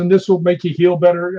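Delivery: ordinary talk, nothing marked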